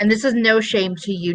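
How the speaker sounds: ordinary delivery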